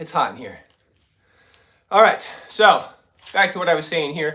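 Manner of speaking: very loud, winded, out of breath. After doing push-ups in front of viewers, the speaker carries on, out of breath. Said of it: "One second to catch my breath".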